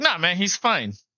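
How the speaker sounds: mock irritated, grumpy, agitated, dismissive delivery. Retelling the same interviewee's reply: imitating an agitated, grumpy answer. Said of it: "he just seemed so agitated".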